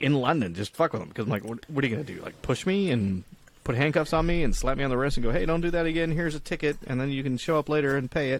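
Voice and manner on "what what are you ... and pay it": normal talking voice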